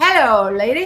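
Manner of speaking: put-on British accent. Retelling how a man introduced himself to her, in Nigel's British accent. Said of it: "with his British accent".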